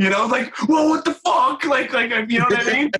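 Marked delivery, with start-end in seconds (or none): 0.7-1.6 high, pitched-up hollered outburst. Retelling a Ouija board session, imitating himself yelling at the board. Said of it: "yelling down at the board".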